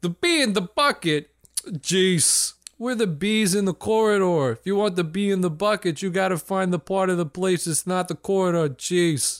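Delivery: put-on Brooklyn accent. Voicing bees leaning out of a window: brooklyn accent. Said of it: "Brooklyn bees".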